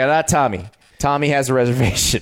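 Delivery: normal talking voice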